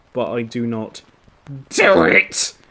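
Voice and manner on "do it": high, piercing, shrieking screech. The creature screeches his demand at the narrator, screeching. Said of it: "he screeches".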